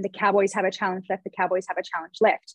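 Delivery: ordinary talk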